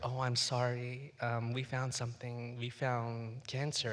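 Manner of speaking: mock whispering. Retelling how the doctor broke the news: imitating the doctor whispering. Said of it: "he whispers".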